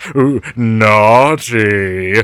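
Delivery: creepy, suggestive delivery. Joking about how a cartoon character would act at home: imitating Fred. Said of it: "being all like".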